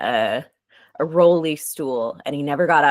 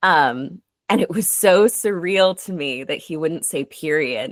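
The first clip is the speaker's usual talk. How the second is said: normal talking voice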